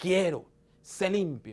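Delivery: passionate, heartfelt delivery, full of feeling. Showing how Jesus's words can be interpreted, said passionate, full of feeling. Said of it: "estoy afirmando que Jesús dijo eso con pasión".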